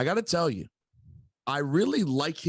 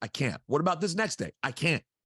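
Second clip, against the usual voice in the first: usual speaking voice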